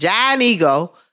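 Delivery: Pittsburgh-accented speech. Storyteller recalling getting to work in a Pittsburgh snowstorm, in a Pittsburgh accent. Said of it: "I'm using my Pittsburgh accent now".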